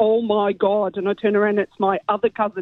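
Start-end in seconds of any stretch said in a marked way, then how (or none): 0.0-1.0 put-on broad Derry accent, laid on very thick. Retelling how you heard your other cousin in the bathroom, in a really thick Derry accent. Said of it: "in a really thick Derry accent".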